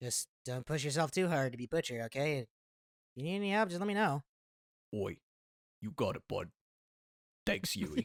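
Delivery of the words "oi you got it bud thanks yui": very low, deep character voice. Told not to push too hard to be Butcher, answering in Butcher voice. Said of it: "I was doing the butcher voice".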